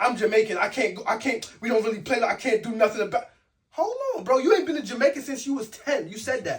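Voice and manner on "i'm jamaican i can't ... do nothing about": mock crying, tearful pleading tone. Retelling how someone online talked about a fight: imitating someone crying. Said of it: "the man is online crying, like, literally crying, saying".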